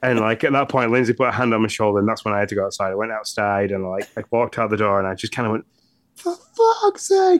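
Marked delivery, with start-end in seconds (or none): 6.2-7.4 mock yelled at top of voice, pitched high. Retelling stepping outside after someone touched their shoulder, reenacting a top-of-voice shout. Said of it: "at the top of my voice".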